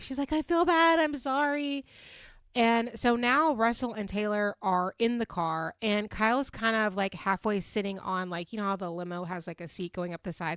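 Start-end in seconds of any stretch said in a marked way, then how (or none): 0.3-1.9 high, slow, crying, remorseful voice. Retelling a scene where someone cries apologizing: imitating Kyle crying. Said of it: "She's crying".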